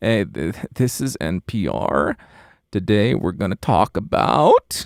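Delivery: exaggerated creaky vocal fry with rising upspeak. Giving an exaggerated example of a speech habit, NPR host with vocal fry and upspeak. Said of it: "Maybe vocal fry with upspeak".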